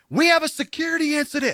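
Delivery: high screaming. Speaker retelling what they yelled at the train staff: retelling a yell. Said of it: "And I'm yelling and screaming".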